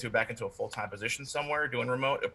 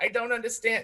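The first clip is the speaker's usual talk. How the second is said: put-on nagging voice; 11 semitones higher than usual. Doing an impression of his mom, asked by the other speaker: imitating his mom. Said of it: "Avi does a great impression".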